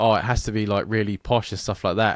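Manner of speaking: ordinary talk, nothing marked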